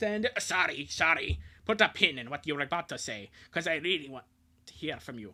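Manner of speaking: over-exaggerated put-on Scottish accent. Apologizing for cutting the other person off, in an over-exaggerated scottish accent. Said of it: "the over exaggerated Scottish voice like immediately after".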